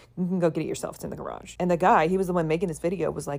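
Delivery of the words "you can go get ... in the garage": acted tone that suddenly turns hostile and unfriendly. Retelling a mom answering her son's girlfriend: imitating a mom's suddenly flipped attitude. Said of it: "her attitude suddenly flipped".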